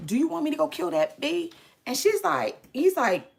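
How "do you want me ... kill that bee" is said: acted-out rough, frantic, losing-it outburst. Retelling the side chick's reaction to news, imitating someone flipping out. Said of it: "flipping out".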